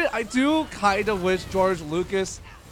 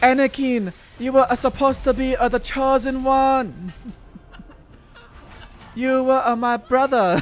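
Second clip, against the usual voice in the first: pitched-up bad Japanese dub style delivery; 5 semitones higher, 4 dB louder than usual. Speaker recounts a hilariously bad dubbed death scene, doing a bad Google Translate Japanese dub. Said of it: "very very bad uh, Google Translate Japanese voice dub".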